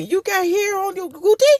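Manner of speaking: put-on thick Spanish accent, laid on. Retelling what a man said to them on a swing, imitating a man's heavy accent. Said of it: "he had a very heavy accent".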